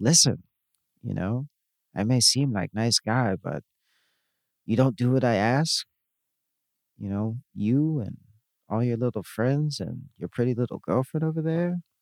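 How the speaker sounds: put-on expressionless, calm, menacing deadpan delivery. Retelling what a man leaning on his car says, imitating a deadpan delivery. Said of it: "he delivers like this deadpan".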